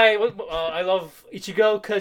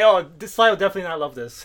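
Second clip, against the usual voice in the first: ordinary talk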